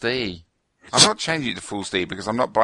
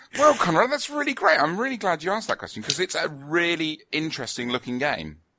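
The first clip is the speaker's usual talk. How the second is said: put-on fake enthusiasm, high and swooping; 7 semitones higher than usual. Answering the question again after being asked for more enthusiasm: put-on enthusiasm. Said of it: "More enthusiasm".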